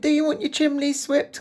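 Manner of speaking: put-on very high little Victorian chimney-sweep boy voice. Mocking an English accent from an episode, the speaker does a little Victorian boy voice. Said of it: "Kind of a guy".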